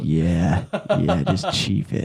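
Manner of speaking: imitated whisper. Retelling how the boss at a work party handed over a cigar: imitating boss whispering. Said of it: "he's whispering in my ear".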